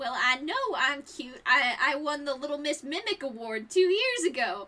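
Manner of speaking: sassy, showy character voice full of attitude. A storyteller voices Boxy speaking up in the scene, sassy Boxy voice. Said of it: "I have the sass".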